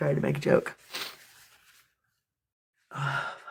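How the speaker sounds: soft, whispered voice cracking into tears.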